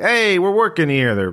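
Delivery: put-on shouted, very high-pitched, with New York accent. Narrator voicing warehouse workers yelling at the players, yelling in a New York accent. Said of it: "They have New York accents for some reason".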